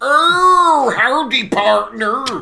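very loud, high, put-on cowboy American, drawn-out "oh". Impression of Kenneth Williams's Carry On cowboy: Kenneth Williams American cowboy voice. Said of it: "your impression of Kenneth Williams' impression of an American".

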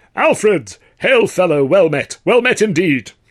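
big resounding voice. Narrator reading a confident man greeting Alf, booming. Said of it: "with a booming".

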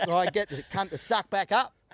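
ordinary talk

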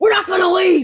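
loud, high-pitched yelling. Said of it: "yelling at Lisa".

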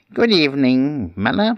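high, wet, watery sprite voice. Narrator reading the sprite greeting the miller, watery voice. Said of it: "in a watery voice".

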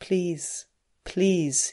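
muttered under breath. A man urges a woman on in the dark: muttered. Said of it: "he muttered".

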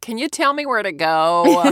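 bad, loud, exaggerated American accent, "go" drawn out. English speaker mimicking how she sounded in America, in an awful over-the-top American accent. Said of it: "I can hear the just awful American".

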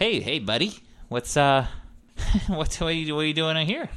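high halting voice. Voicing a character to a player walking over: Steve Buscemi voice. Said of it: "It is Steve Buscemi".

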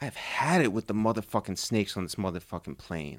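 very soft, very low, hushed, mournful voice. Told to do it like a sad movie, the speaker says the line: sad, like a sad movie. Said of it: "do it like a sad movie".

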